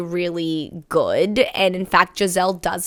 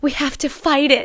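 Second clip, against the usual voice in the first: sweet delivery, slightly higher pitch; 7 semitones higher than usual. Quoting a film character's line from a movie review: imitating Giselle saying it sweetly. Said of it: "so sweetly".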